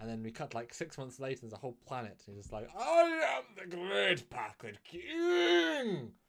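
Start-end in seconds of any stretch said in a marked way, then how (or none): 2.8-6.1 put-on posh British accent, very high, slow. Playing the Packland King in an imagined scene, posh British accent. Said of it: "He's got a really posh British accent".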